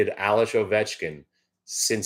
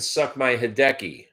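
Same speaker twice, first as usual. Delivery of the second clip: mock drunk voice, screaming high and jeering; 5 semitones higher than usual. Retelling a drunk fan at a baseball game: imitating a drunk fan screaming. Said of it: "kept s-, screaming".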